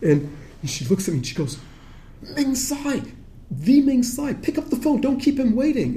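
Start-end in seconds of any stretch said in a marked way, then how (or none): 2.2-6.0 put-on frantic, overexcited, very high, swooping pitch. Retelling how she urged the speaker to take a phone call, imitating someone frantic. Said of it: "calm down".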